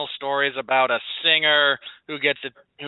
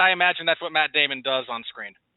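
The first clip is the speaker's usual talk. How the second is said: ordinary delivery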